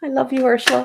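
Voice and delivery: high, choked-up voice on the verge of tears. After Ursula calls the speaker an earth angel, the speaker answers her: choking up. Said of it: "I'm really going to cry".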